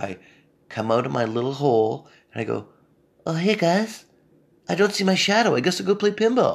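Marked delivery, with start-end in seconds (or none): 3.3-6.6 put-on groundhog critter voice, high-pitched. Acting out coming out of a hole like the groundhog: groundhog voice. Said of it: "I don't know why the groundhog has that voice".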